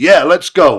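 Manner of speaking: put-on very loud, high, big Texan accent. Retelling being met at the airport by Lance, Lance's big Texan accent. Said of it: "This big Texan accent".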